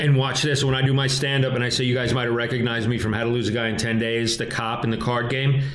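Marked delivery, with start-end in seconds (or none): none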